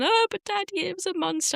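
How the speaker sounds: mock very high, tearful, sobbing little-kid voice. Retelling her child waking from a nightmare, imitating a crying child. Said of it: "you know she's crying".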